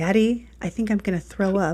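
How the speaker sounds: hushed whispered words. Retelling an elevator moment, a mother quotes her unwell daughter whispering to her dad. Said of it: "she just whispers to him".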